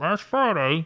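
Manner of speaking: put-on old-timey, vintage radio broadcast announcer voice. Demonstrating how a headline should be read, in an old-timey radio voice. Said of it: "do the old timey radio voice".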